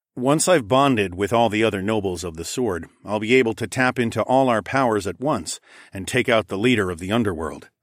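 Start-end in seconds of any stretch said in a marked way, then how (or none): none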